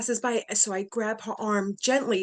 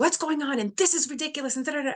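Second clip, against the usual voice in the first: mock furious angry ranting, pitched up; 5 semitones higher than usual. Retelling how a mother came in: imitating an angry, furious mother. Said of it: "My mother comes in angry, furious".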